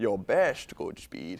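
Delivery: very low, slow, dragged-down Scottish accent. Redo the line from The Rock after the advice to slow down, in a slowed-down Sean Connery accent. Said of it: "You need to slow it down a little bit".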